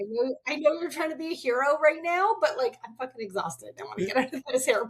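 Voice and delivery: annoyed, fed-up, irritated griping. Retelling a tired partner's complaint at the airport: imitating an irritated husband. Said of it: "my husband at the time was very irritated".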